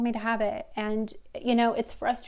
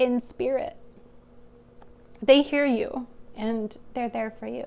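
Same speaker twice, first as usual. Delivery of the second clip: voice catching, choked with emotion. Giving listeners a reading about a loved one close to them, choked up. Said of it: "sorry, I got choked up".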